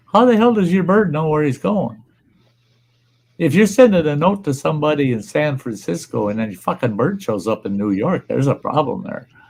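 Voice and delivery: ordinary talk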